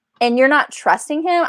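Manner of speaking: acted-out exasperated, incredulous, irritated tone, high pitch. Retelling what was thought while reading, retelling an irritated reply. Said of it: "I was so irritated".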